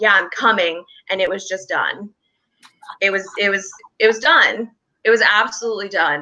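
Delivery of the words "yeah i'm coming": usual speaking voice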